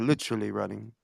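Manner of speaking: fancy, polished, refined, very classy delivery. Repeating another speaker's words back: imitating a classy-sounding delivery. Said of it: "you sounded mad classy when you said that".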